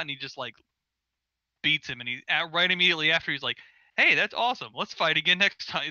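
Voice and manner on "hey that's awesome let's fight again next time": acted, put-on carefree tone. Describing an anime character, acting out his words after winning a fight: mimicking carefree tone. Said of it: "he's really carefree".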